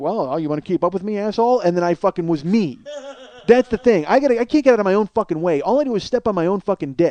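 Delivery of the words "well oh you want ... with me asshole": ordinary talk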